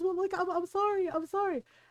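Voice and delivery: put-on blubbering voice. Retelling the uncle's apology after the mom scolds him: imitating someone blubbering. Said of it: "starts blubbering and goes".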